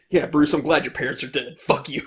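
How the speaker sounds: sassy put-on butler voice. Retelling a movie scene, imitating the butler: sassy Alfred impression. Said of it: "a sassy bitch all throughout the movie".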